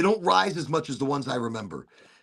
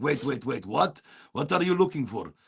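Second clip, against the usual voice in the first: put-on Middle Eastern accented speech. Retelling what a man asked him, speaker does a Middle Eastern accent. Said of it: "I can do a Middle Eastern accent".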